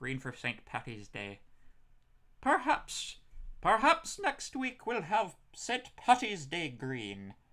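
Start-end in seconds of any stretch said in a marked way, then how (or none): 2.4-7.3 clumsy, bad put-on Irish accent, very high, swooping. Speaker wrapping up for listeners with a joke: bad Irish accent. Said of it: "I could do a better Irish accent than that".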